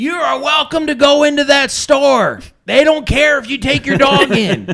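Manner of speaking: mock drunken shouting. Retelling how a drunk man on a porch yelled across the street: imitating a drunk man yelling. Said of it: "he's yelling at me".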